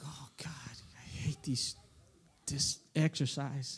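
put-on muttering under breath. Retelling a moment during the coach's exercise, retelling muttering under breath. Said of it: "And under my breath".

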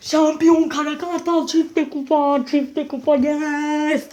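very slow, drawn-out celebratory yell, "yes" stretched. A fan celebrating the championship from the balcony, shouting. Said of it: "Aklı açık bağırma vakti".

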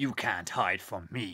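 slow, drawn-out, put-on character voice. Doing a funny voice for a line from inside the suit: Springtrap voice. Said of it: "I am gonna do a Springtrap voice because I think that's really funny".

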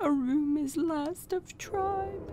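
mournful, high, sad hooting creature voice. Narrating a creature that addresses the players, in a sad hooting voice. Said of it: "The creature hoots sadly as it addresses you".

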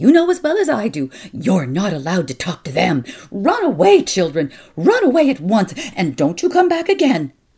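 icy fury. Aunt Burl, finding the little Kelvies in the courtyard, orders the children away, cold and furious. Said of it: "with her cold, furious voice".

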